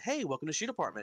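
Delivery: put-on chipper, upbeat voice. Recalling their greeting at shoot apartment, retelling a chipper greeting. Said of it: "it's not like my normal speaking voice".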